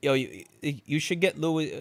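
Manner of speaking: put-on Staten Island Italian accent. Recalling what people always said in childhood, in a failed Staten Island Italian accent. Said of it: "I'm trying to do an, a Staten Island Italian accent, and I'm failing".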